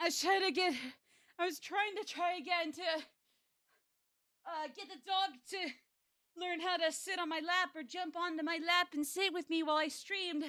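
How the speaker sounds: breathless, still catching breath. Streamer greets viewers after trying to train the dog, out of breath. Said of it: "Sorry I'm out of breath".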